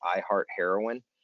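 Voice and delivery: plain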